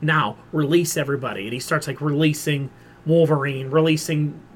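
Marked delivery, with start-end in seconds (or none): none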